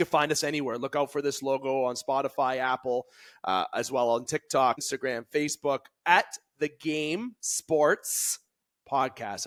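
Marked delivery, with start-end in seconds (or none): 6.6-9.5 final s of Sports hit hard. Podcast host saying the show's name: emphasis on the final s of Sports. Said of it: "I put emphasis on the S".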